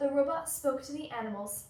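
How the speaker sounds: ordinary delivery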